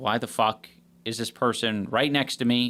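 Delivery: ordinary delivery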